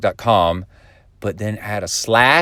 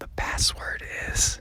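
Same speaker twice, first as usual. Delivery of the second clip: secretive hushed whisper, very quiet, barely there. Telling the audience the secret password so nobody else can hear, whispering. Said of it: "I'm going to whisper it to you".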